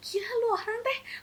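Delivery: high, loud laughing-crying rant.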